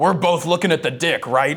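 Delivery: play-acted, very loud, carrying, indiscreet blurted remark. Retelling what a person sitting nearby said: imitating Sasha speaking very loudly. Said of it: "very loudly goes".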